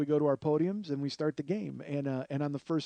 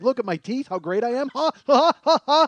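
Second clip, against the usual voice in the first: put-on very loud, very high crazy rich-guy laughter; 9 semitones higher, 11 dB louder than usual. Retelling how Chuck laughed at a joke: crazy rich guy laugh like Mister Howell. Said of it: "He laughs like a crazy rich guy laugh".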